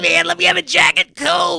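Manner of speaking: very high, loud, raspy, rough voice. Correcting someone's impression of Corey Feldman ordering a drink; Corey Feldman impression. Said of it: "A little bit higher".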